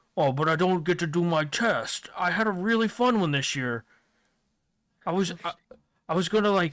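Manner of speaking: hulking, behemoth giant ogre character voice. Voicing a huge ogre-like giant in a story, giant ogre voice. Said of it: "he is just an absolute behemoth".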